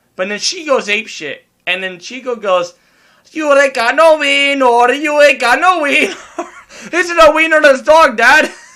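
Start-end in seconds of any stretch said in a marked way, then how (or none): 3.3-8.5 mock Mexican-accented voice. Retelling what the dog Chico said when the other dog went wild; Chico's Mexican dog voice. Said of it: "the fucking Mexican voice".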